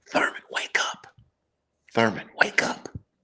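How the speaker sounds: soft, breathy, close whisper. Retelling how the coach woke a sleeping player: imitating a whisper. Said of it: "and whispers".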